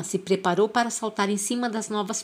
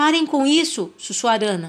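loud, high-pitched shout; 5 semitones higher, 4 dB louder than usual. Bentivy shouts at the puma, shouting. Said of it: "gritou Bentivy".

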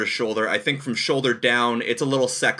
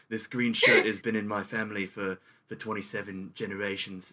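put-on British accent; 2 semitones lower, 7 dB quieter than usual. Doing a douchey celebrity impression, in a Johnny Depp British accent. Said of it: "Why are you using a British accent?".

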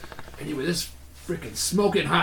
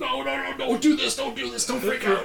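put-on panic, much higher pitch; 11 semitones higher than usual. Speakers imagining what the handler thought, imitating a handler freaking out. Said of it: "Freaking out. I bet".

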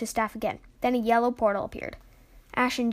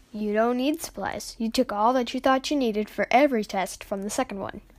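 ordinary delivery

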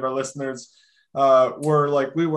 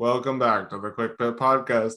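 mock flat, low-energy voice, pitched lower; 4 semitones lower than usual. Mocking how the co-host introduces a segment: imitating Connor's low-energy intro. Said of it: "you have to show more energy".

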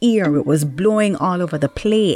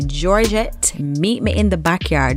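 plain

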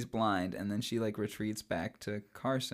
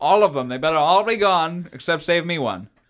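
put-on booming, belted Scottish accent, pitched up; 6 semitones higher, 13 dB louder than usual. Acting out a man tossing a packet to kids, Sean Connery impression. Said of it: "Why am I talking like this?".

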